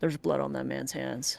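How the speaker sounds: quiet, low, hushed undertone. Player character turns to speak to a companion, hushed tone. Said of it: "In a hushed tone".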